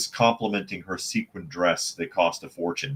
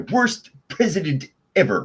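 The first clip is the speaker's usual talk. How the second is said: high-pitched, smug nerd voice. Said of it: "invoking, uh, comic book guy".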